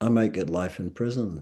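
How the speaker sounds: ordinary talk, nothing marked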